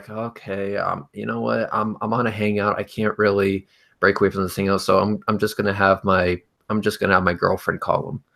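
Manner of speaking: very monotone, dead level, flat delivery. Retelling what they told friends at a hangout, in a very monotone voice. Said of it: "I would do in like a very monotone voice".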